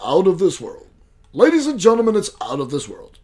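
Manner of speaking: TV commercial announcer voice-over delivery. Presenter hyping tonight's presentation to the audience, in a tv commercial voice. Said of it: "In that commercial voice".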